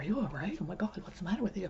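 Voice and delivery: rushed, worried, over-concerned fussing. Imitating people rushing over when he did not smile: imitating really concerned people. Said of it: "really concerned".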